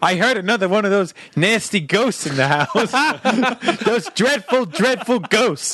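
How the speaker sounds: put-on New Jersey accent, grandma voice. Retelling what Grandma called out, imitating Grandma's New Jersey voice. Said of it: "Did she sound like the Ghostbusters receptionist?".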